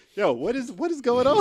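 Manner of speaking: play-acted bewildered, exasperated cry, pitched way up. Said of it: "I'm like".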